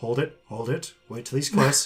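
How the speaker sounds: gentle, mild-toned voice. Game master voicing a voice the players hear, in a soft voice. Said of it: "you hear a soft voice go".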